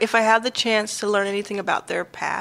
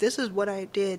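mock offhand nonchalant delivery, quieter; 6 dB quieter than usual. Describing how people tell about their past: imitating a nonchalant tone. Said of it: "saying it kind of in a nonchalant way".

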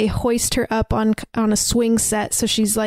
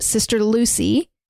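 normal talking voice

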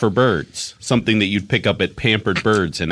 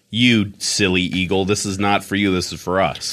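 ordinary talk, nothing marked

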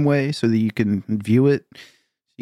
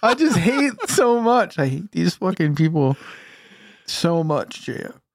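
high, tearful voice, speaking through tears; 7 semitones higher than usual. Talking to jf about the companies they hate, the speaker is crying. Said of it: "I'm crying right now because I really am".

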